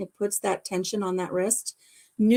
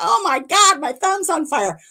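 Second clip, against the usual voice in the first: mock high, long, stretched-out screaming cry; 7 semitones higher, 4 dB louder than usual. Telling about a cortisone shot in the wrist, retelling own scream. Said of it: "and I'm screaming".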